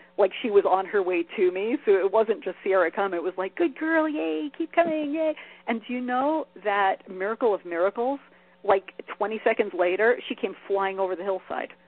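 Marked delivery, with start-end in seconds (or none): 3.6-5.4 play-acted, very high, cheery, happy voice. Retelling calling the dog back in the training voice: reenacting own high, happy voice. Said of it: "the high, happy voice".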